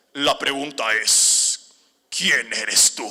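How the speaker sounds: loud, deep, booming demonic voice. Answering repeated phone calls, trying to scare the callers: demonic possessed voice. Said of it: "les empiezo a hablar con voz de endemoniado".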